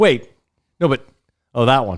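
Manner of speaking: mock muttering, puzzled, as if figuring out. Teasing another speaker by imitating them working it out in their head: imitating someone puzzling it out. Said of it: "just you working that whole thing out in your head".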